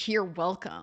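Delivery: put-on, very snide, sneering, belittling tone. Quoting her reply to Mister Razi's thanks, mock-snide tone. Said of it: "very snide, very disparaging".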